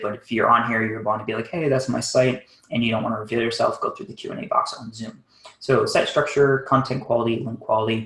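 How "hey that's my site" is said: plain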